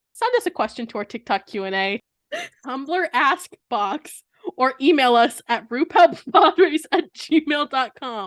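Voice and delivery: reading through tearful laughter. Reading out the show's contact details late at night: crying with laughter while reading. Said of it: "I'm crying while I read this".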